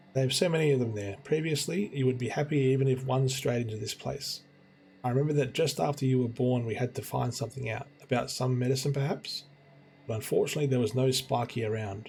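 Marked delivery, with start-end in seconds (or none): none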